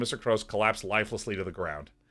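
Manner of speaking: normal talking voice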